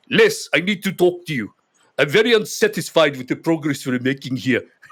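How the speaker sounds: put-on heavy South African accent, laid on thick. Retelling what a big south african man told him: strong south african accent. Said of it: "very strong South African accent. ... This is my mimicry".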